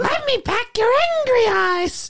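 put-on, very high-pitched woman's voice. Showing the others how she sounds when she talks: imitating a woman's voice. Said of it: "That's how she sounds".

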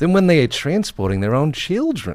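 Australian accent. Reading a research news item aloud, in an australian accent. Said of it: "I'm going to read it in an Australian accent".

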